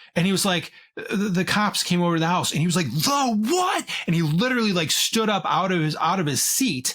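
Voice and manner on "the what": mock judge's yell, pitched very high. Retelling how the judge stopped him in his tracks: imitating a yell. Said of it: "He yelled at him".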